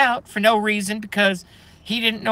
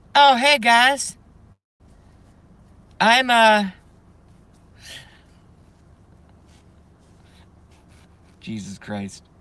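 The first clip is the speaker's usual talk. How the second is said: slow, swooping, cracking up laughing partway through; 3 dB louder than usual. Starting a joke bit but breaking up: laughing while talking. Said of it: "I can't even do it without laughing".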